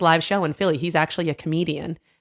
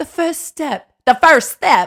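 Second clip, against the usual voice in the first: high, loud bad British accent that sounds Southern; 10 semitones higher, 8 dB louder than usual. Asked to say the phrase again in a british accent, failed british accent, sounds southern. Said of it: "Nope, nope. That's Southern".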